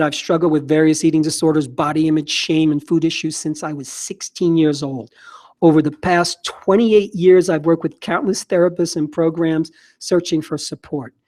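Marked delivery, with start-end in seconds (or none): none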